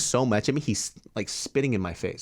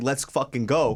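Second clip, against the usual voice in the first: acted-out furious yell, higher pitched; 3 semitones higher than usual. Retelling squaring up for a fight, retelling furious yell. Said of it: "I'm so fucking angry".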